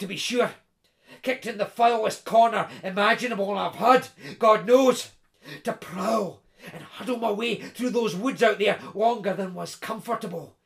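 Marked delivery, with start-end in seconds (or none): none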